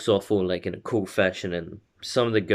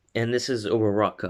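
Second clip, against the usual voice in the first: plain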